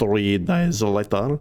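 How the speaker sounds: playful, cartoon-style voice and delivery. Repeating a caption another speaker read, saying it like SpongeBob. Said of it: "if you wanna say it like SpongeBob".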